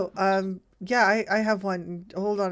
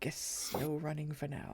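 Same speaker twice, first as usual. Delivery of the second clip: very quiet, very soft whisper under the breath; 4 semitones lower, 14 dB quieter than usual. A character whispers under his breath to Nyx, soft whisper. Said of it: "whispers under his breath very softly".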